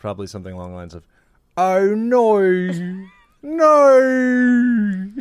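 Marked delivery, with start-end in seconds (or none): 1.6-5.1 very high, stretched, drawn-out Australian "no". Imitating someone's reaction: Australian accent no. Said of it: "I love an Australian no".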